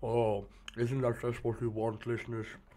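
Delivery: radio voice, talking through a mouthful of chocolate. Speaker addressing listeners while eating chocolate, talking with mouth full of chocolate. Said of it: "my radio voice is so good with chocolate in my mouth".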